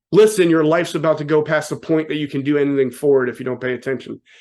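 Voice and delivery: ordinary talk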